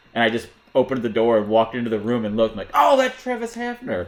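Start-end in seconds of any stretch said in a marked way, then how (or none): 2.7-4.0 acted-out very high, stretched-out, blurted yell. Retelling walking into a meeting drunk, imitating own past shout. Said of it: "I just yelled it out".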